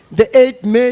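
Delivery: ordinary delivery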